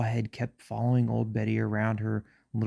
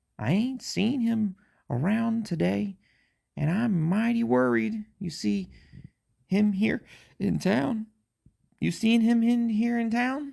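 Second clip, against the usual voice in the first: put-on very high-pitched voice with a country accent; 12 semitones higher, 3 dB louder than usual. Storyteller voicing old Betty talking to the owner, old Betty's country accent. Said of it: "I gave old Betty a, a, a country accent".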